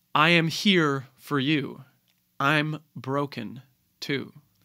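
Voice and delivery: very slow, sorrowful, dramatic actor's reading. Showing how an actor would speak the line, with a sad actor's delivery. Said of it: "there's this sadness to the second part of it".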